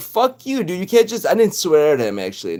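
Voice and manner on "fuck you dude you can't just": yelling, acted out, pitched higher. Retelling an argument with a supervisor at work: retelling own yelling. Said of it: "I started yelling at him".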